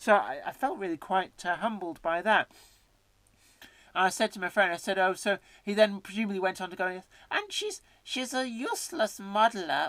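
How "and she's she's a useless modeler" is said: fake comedy German accent, hammed up, swooping high. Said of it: "that's not really a German accent".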